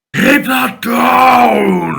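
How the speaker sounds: very high, loud, rough big bear voice. Narrating a scene, the speaker voices a character in a big bear voice. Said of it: "in his big bear voice".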